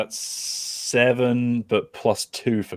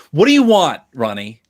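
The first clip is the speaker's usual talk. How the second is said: fed-up, frustrated, exasperated outburst with raised voice; 4 semitones higher, 7 dB louder than usual. Recounting a scene where Cara finally snaps at Ronnie, mock-frustrated as Cara. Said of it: "Cara gets frustrated and is just like".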